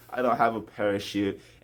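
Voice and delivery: ordinary talk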